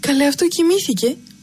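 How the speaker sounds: happy, delighted, cheerful tone. Narrator reads Chloe looking at the sleeping little one: murmuring happily. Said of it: "μουρμούρισε χαρούμενα η Χλώη".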